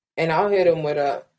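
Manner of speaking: ordinary talk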